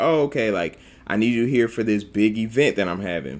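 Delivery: ordinary talk, nothing marked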